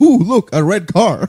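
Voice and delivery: play-acted very loud, high, easily thrilled excitement. Imitating another speaker's easy excitement at small things: imitating an excitable person. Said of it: "You are a very excitable person".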